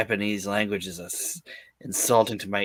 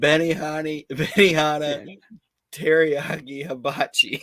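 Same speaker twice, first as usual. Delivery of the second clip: startled, jumpy, pitched-up blurt; 6 semitones higher than usual. Retelling a startled line from a comedy movie: imitating Anna Faris startled. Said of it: "She says it, like, startled".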